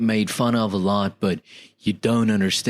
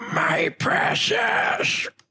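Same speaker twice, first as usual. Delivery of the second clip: very high, pitched-up creature voice. Given the chance, the speaker tries a Gollum impression. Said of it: "[name]'s impression of Gollum".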